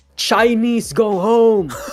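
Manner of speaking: blaring scream, loud and high. Retelling a stranger shouting at tourists at a shrine: imitating someone screaming. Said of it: "screaming in the middle of the street, shouting".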